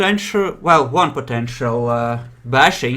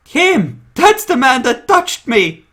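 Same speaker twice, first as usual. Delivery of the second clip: put-on very high, small little girl's voice; 10 semitones higher, 3 dB louder than usual. Telling a joke, the speaker voices a girl heard in the scene, little girl's voice. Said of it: "then you hear a little girl's voice".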